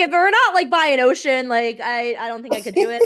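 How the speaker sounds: high, loud incredulous outburst.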